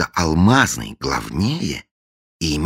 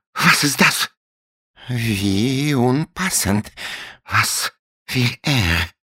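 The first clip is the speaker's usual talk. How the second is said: very slow, halting, bewildered, pitched-up words; 7 semitones higher than usual. Krank, startled by an insistent doorbell, mutters in confusion. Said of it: "Растерянно пробормотал он".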